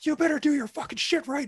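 very high, shrill drill-instructor scream. Speaker retells jacking them up from the center of the drill square; retelling a scream. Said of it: "we're just screaming at each other".

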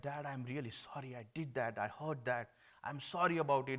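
put-on tearful, apologetic crying voice. Retelling how a crying son apologized to his dad: imitating a son crying. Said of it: "he was crying loudly".

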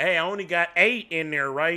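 put-on loud talking. Retelling talking at the bank teller window: imitating own loud bank talk. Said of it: "be the loudest".

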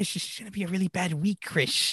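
voice sounding like talking around a retainer. Imitating a friend's warning again: imitating Tyler's voice, like a retainer. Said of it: "sounds like you just have a retainer".

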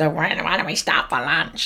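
hungry, pleading cartoon mouse character voice. Retelling a cartoon scene, imitating the hungry mouse character. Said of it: "I do sound a bit like him with my voice".

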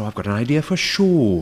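badly done, awful put-on Welsh accent. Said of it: "That was a terrible Welsh accent".

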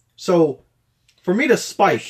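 full-on shout, high and very loud. Telling the story of a middle-school volleyball set, shouting. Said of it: "You're shouting, dude".

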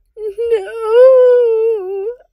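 piercing shriek, very high, very loud. Umbridge answers Voldemort's threat, shrieking. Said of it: "Umbridge's voice rose in a shriek".

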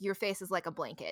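ordinary delivery

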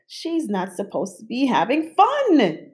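sudden, blurted-out delivery. The narrator reacts as the little girl giggles, blurting out. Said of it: "I blurted".

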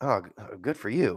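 muttered under the breath. Retelling a bartender's reaction on learning the speaker pastors a church, muttered under his breath. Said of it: "mutters under his breath".

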